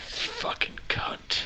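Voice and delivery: muttered, low voice. A game master voices a character reacting to a halfling, Willy Bold muttering under breath. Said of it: "you hear Willy Bold mutter under his breath".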